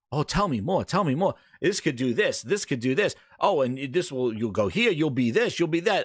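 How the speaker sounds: plain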